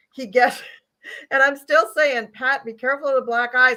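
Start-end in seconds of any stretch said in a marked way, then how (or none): 2.3-3.7 mild, called-out raised voice. Recalling warning the man ahead from the car behind, retelling a yell. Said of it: "I'm like yelling out of the car".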